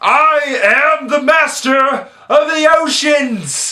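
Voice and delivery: very high, very slow, drawn-out British yell. Quoting Patrick Wilson's movie declaration, shouted in a British accent. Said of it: "Without the British accent, of course. I don't know why I did that".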